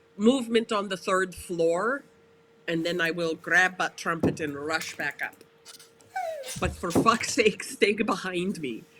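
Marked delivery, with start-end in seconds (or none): none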